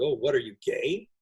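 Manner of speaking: mock-derogatory, disparaging tone. Retelling how someone asked the speaker's son a question, mimicking a derogatory tone. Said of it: "he said it with a kind of a derogatory tone".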